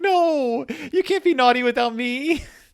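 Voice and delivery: very high-pitched, weepy, crying, protesting voice. Retelling a story where a child starts crying: mock crying while retelling. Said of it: "And then Blue Eyes starts crying".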